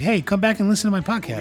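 cheerful, upbeat tone. Showing another speaker how to redo a sign-off: happy podcast sign-off. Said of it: "do that again one more time with a little more, like, happiness".

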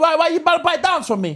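angry. Urging someone to buy a dance from them: angry. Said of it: "but you're too angry".

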